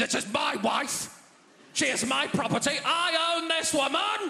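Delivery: mock-aggressive, territorial tone. Acting out how a man sounded saying my wife: mock-aggressive, territorial husband. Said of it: "Always sounded so aggressive, so territorial".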